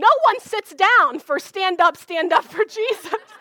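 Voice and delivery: forceful, loud announcer-like delivery. Retelling a woman at the mic scowling at the congregation: imitating a forceful announcement. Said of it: "announced forcefully to us".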